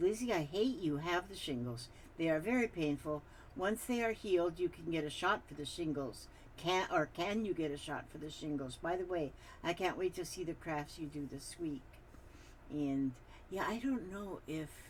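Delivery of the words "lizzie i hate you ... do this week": usual speaking voice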